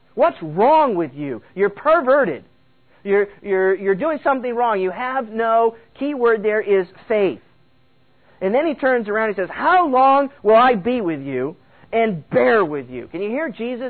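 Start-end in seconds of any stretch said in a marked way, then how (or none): 9.6-13.1 mock, fed-up, disgusted, scolding tone. Speaker retelling a master's words to his disciples, acting out a disgusted rebuke. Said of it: "he's rebuking them".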